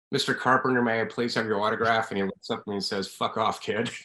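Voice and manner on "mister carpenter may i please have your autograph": ordinary delivery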